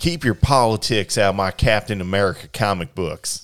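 loud, put-on Southern twang. Reading out a tweet from this week's Twitter argument, in a Southern twang. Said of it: "I don't know why I did like the Southern twang".

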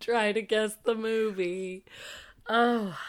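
crying with laughter. Joking with another speaker about guessing a movie, laughing to tears. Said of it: "I'm crying a little".

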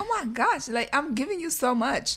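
high, gushing, mock overjoyed, generous-sounding tone. Retelling how he sounded giving the thirty-eight cents: imitating someone sounding so happy. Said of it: "he sounded like he was so happy".

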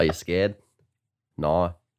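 put-on Australian accent. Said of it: "do Twilight, but if it was Australian".

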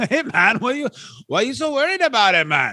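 high-pitched, dopey villain voice. Imitating a wrestler as a stupid Joker: imitating Mad Dog Vachon. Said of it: "he's like the stupid Joker".

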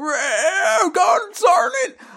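put-on very high, really old elderly man voice. The speaker shows how they do a really old man voice. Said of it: "like a really old man voice".

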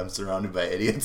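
plain

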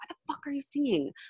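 high-pitched, hushed, angry whisper. Retelling meeting a sister at the bathroom door at midnight: imitating a hushed angry whisper. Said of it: "in a hushed, angry whisper".

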